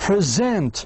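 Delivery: present, stress on second syllable -sent. Teaching stress in two-syllable words: present stressed on second syllable. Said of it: "It has two syllables and you need to stress the second one".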